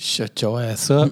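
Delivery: offhand, tossed-off aside. Retelling what you said back to her across the room, said very quietly. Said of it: "I said it so quietly".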